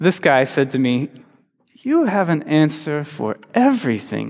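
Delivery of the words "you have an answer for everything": soft, patient and gentle, slightly exasperated. Retelling what a man once said to them: imitating a gentle, exasperated remark. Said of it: "very gently, and a little exasperated".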